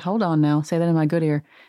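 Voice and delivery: ordinary delivery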